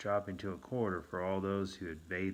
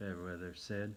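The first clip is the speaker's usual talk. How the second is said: ordinary delivery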